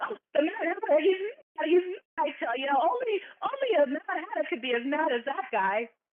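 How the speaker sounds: high voice, chuckling through the words. Voicing the hare asked about the Mad Hatter: acted laughing while talking. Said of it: "and he starts laughing. He goes".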